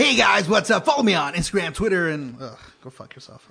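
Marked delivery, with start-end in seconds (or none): 0.0-2.1 very loud, hyped-up vlogger intro voice. Pretending to plug social media as a YouTuber: mock YouTuber voice. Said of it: "what if I was, like, a YouTuber?".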